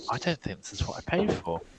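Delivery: high, hushed half-whisper. Player leaning in to speak to a character during a game, half-whispering. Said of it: "just I'll just I'll just whisper".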